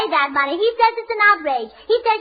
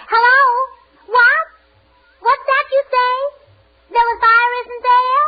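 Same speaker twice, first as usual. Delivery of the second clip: emphatic, projected voice; 3 semitones higher than usual. Taking a phone call the speaker says is to Egypt: loud, shouting into phone. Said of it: "why are you speaking so loud?".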